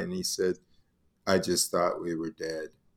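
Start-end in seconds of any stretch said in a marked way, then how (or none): 1.3-2.7 very low, very quiet, bone-dry deadpan. Speaker retells what a very deadpan guy said afterward, retelling a deadpan remark. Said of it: "Frank was a very deadpan".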